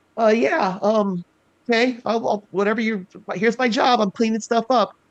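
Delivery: put-on very high, convincing goblin kid voice. Recalling a line the goblin kid said: goblin kid character voice. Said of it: "it's crazy how you sound exactly like".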